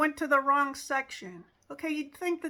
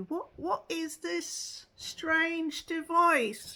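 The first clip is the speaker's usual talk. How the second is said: fake Renaissance period accent, likely inaccurate; 5 semitones higher than usual. Speaker quoting Renaissance fair performers addressing a visitor, put-on Renaissance fair accent. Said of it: "I'm probably doing the accent wrong".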